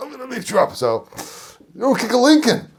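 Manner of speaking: very high, loud, really upset voice. Retelling what a driver said after the speaker kicked his car, acting out an upset man. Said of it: "Really upset".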